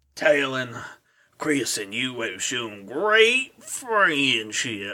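low, soft, scratchy voice. Reading a story aloud, the narrator voices a voice from nowhere: scratchy voice. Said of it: "in scratchy voice".

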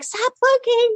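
very high-pitched, frantic pleading tone.

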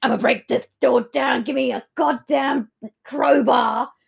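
put-on, chest-puffed, rough, blustering voice. Retelling a character's demand for a crowbar: imitating a puffed-up angry man. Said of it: "imagine him puffing up like a pigeon".

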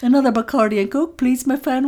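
botched, bad, failed attempt at Welsh accent. Trying a Welsh accent for a sketch line: failed Welsh accent attempt. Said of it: "that's not a Welsh accent".

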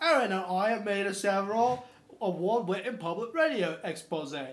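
put-on British accent. Podcast hosts imagining a british podcaster, imitating a british accent. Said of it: "that's how they sound".

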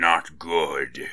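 low, gravelly, growling gargoyle creature voice. The gargoyle turns on her and growls, in a low, gravelly gargoyle voice. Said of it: "it said in its low, gravelly voice".

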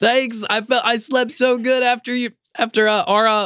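high shout, pitched way up. Voicing the quartermaster answering from above: shouting down. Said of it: "shouts down".

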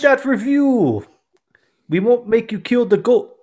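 put-on, fake Jamaican accent. Doing a promo for the podcast in a Jamaican accent. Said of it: "speaking in a Jamaican accent".

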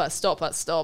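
ordinary talk

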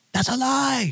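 very high, out-of-control, unhinged outburst. Retelling how the other driver reacted in front of police, imitating someone losing it. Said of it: "Like just losing it".

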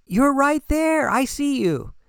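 teasing, mocking, very high-pitched put-on voice. Answering people who say they're searching for themselves, mocking. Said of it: "I know I'm mocking it".

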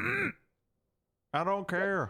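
put-on southern drawl. Doing an impression for the others as a joke: Tommy Lee Jones voice. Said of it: "It's Tommy Lee Jones".

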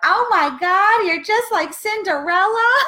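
very high, loud shriek. Recalling a romantic moment, the speaker re-enacts a woman across the patio yelling out. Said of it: "literally yells out".

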